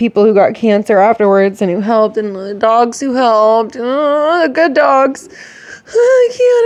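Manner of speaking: tearful, on the verge of crying, very high voice. Speaking of those lost and who helped on nine eleven, close to tears. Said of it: "I'm gonna start crying again".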